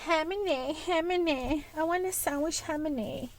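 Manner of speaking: put-on old woman voice. Imitating how a grandmother would say words: imitating Grammy's voice. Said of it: "how my Grammy would say it".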